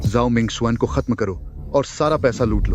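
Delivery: plain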